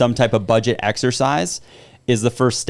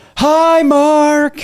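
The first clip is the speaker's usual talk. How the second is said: very high, loud yell, shouted out; 7 dB louder than usual. Retelling the kid greeting passers-by on a bike ride: imitating a kid yelling. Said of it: "just yell".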